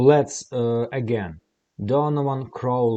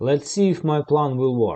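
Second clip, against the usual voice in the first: usual speaking voice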